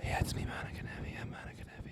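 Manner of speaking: hushed, breathy, very quiet whisper. Teasing Monica for being quiet, imitating Monica's quiet whisper. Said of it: "You're really quiet".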